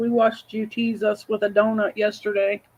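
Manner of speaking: ordinary delivery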